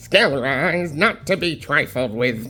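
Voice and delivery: skeleton villain character voice. Reading a villain's comic line aloud: Skeletor voice. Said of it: "my best original Skeletor voice".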